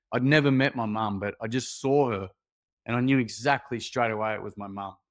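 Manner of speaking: ordinary talk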